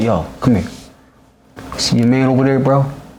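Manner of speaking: low, menacing bully voice. Retelling how the opponent grabbed him before a battle: imitating Debo menacing. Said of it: "on some Debo shit".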